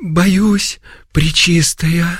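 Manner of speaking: high, quavering, unsteady, trembling voice. Narrator reads a nun answering the Virgin who bids her rise: trembling voice. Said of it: "дрожащим голосом ответила Евдокия".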